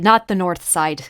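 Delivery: put-on south Dublin Irish accent, said plainly. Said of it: "God forbid".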